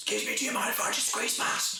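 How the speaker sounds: put-on overly polite shouting, high. Mimicking a cinema-goer asking to squeeze past in the row, imitating someone shouting. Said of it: "why are you shouting?".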